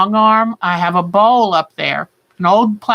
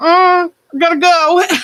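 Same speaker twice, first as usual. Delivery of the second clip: high, whiny voice, stretched long; 9 semitones higher than usual. Telling how she was over here, imitating her whining. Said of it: "she was over here like whining".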